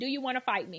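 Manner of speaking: hushed, dead calm, very quiet. Retelling a sidewalk clash with a stranger: imitating saying very calmly. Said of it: "I just said to her very calmly".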